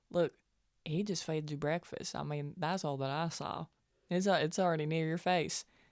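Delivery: soft, hushed, half-whispered aside. Voicing a character leaning over to a girl at breakfast: half-whispering in character. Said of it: "whisper to her and be like".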